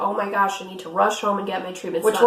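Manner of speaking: ordinary delivery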